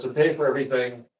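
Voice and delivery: normal talking voice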